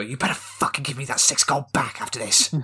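genuine quiet, menacing, hushed whisper. Leaning in to speak to a trader during a game, whispering, not a stage whisper. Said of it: "I lean in and not in a stage whisper".

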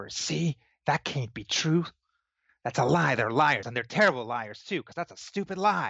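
very loud, loudly whispered stage whisper. A character turns to a companion to doubt the newcomers, very loud whisper. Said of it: "very loudly whispers".

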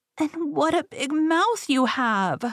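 weak, high and slow. Reading the fairy tale, the little girl speaks to the wolf: feeble murmur. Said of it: "murmured the little girl in a feeble voice".

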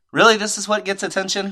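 ordinary talk, nothing marked

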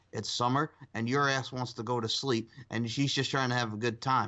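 ordinary talk, nothing marked

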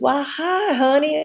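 put-on syrupy Kentucky drawl. Retelling how she greeted the speaker's kids, imitating her Kentucky drawl. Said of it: "she had that Kentucky drawl".

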